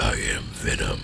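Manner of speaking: breathy, whispered, scary voice. Showing Denki a practiced Venom impression: Venom impression. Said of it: "I have been working on my Venom impression".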